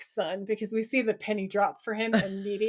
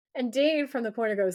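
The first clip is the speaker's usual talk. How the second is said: ordinary delivery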